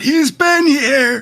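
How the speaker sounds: very high, sudden, loud call-out yell. Finding fox hair that leads into a closet, in character: yelling out. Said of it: "And I yell out".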